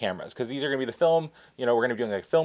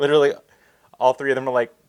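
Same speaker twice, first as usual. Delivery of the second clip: ordinary talk, nothing marked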